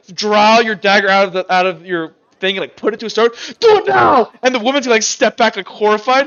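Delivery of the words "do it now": very high, loud, desperate sobbing. Voicing a grieving grandfather begging to be killed: crying, begging to be killed. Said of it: "he's, like, crying at you".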